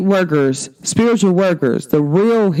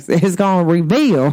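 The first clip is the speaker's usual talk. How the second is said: put-on down-home country accent. Talking to the audience about Saturn going into Pisces, in a country voice. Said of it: "my country voice".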